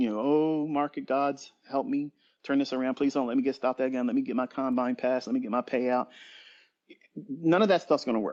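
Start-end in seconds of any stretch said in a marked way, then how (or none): 0.2-6.1 mock desperate, pleading voice. Imitating a trader who is wrapped up in emotion: imitating a desperate trader praying. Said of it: "get wrapped up in the emotion and start praying".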